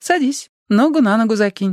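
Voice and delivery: kindly, matter-of-fact tone. Narrator reads a woman speaking to the first-person narrator, a friendly command. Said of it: "дружелюбно приказала".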